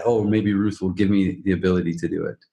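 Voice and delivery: ordinary delivery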